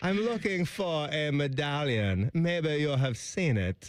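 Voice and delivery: put-on, fake German accent. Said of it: "there's our German accent".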